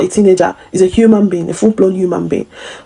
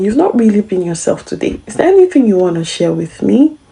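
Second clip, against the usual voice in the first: subtle, gentle, open, inviting tone. Example of asking someone who hasn't been themselves: subtle, inviting tone. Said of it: "if you listen to my tone, it was quite subtle, it was quite inviting".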